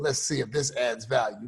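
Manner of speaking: low, soft, snarky, doubting jab.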